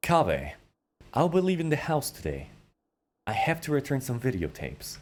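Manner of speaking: composed, calm put-on character voice with swooping pitch. Showing how to act like Patrick Bateman from American Psycho: calm Patrick Bateman voice. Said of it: "If you want to sound like Al Haytham, you need to act like you're pa Patrick Bateman".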